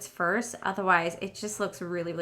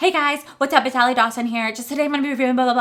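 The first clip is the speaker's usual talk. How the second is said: breakneck, high, loud, rattled-off vlogger intro style; 5 semitones higher, 8 dB louder than usual. A YouTuber imitates the intros of her old videos, imitating her rushed old intros. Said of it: "Why are you talking so fast?".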